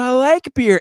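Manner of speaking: put-on childish shout, building. Retelling a child getting louder in Kroger, imitating Sarah shouting. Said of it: "progressively louder and louder".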